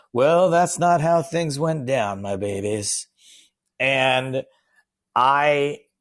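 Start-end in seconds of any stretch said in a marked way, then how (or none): 0.1-3.0 put-on folksy old-timer voice, higher. Retelling a writer's one-man show: imitating a Mark Twain impression. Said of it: "doing this Mark Twain impression".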